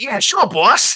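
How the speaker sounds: high, loud, eager classic movie henchman voice.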